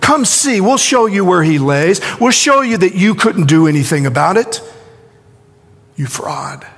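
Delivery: mock sarcastic, jeering, swooping sing-song taunt. Voicing what they say in the story, mock taunting tone. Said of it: "It's a tone of taunting".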